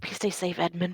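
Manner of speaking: quiet whisper under breath. Casting a healing spell on Edmund in character: whispering under breath. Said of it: "whispering under my breath".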